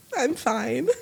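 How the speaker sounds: mock crying through the words, very high whimper. Retelling answering a therapist through tears: imitating crying while talking. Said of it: "through tears".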